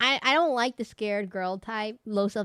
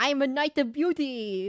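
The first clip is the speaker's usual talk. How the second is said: slow, put-on European accent; 4 semitones higher than usual. Quoting a game knight's line about beauty: imitating a European accent. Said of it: "that European accent".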